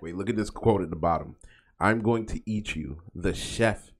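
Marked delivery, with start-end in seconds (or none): none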